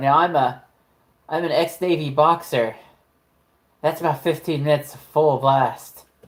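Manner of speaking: put-on southern American accent. Retelling what was heard in a scene, quoting a voice: imitating a southern voice. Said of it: "you hear a southern voice go".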